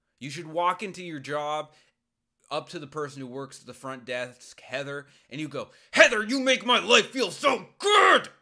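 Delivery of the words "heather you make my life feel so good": angry, very loud and high, teeth gritted. Demonstrating greeting the front-desk worker with anger's energy: raised tone, gritted teeth. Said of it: "keep all of the trappings of anger, increasing your tone, gritting your teeth".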